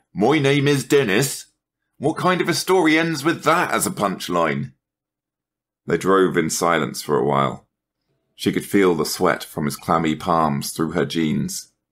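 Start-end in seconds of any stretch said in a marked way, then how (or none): 0.2-4.8 derisive, mocking mimicry, pitched up. A man in a car answers a woman, mocking. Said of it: "saying mockingly".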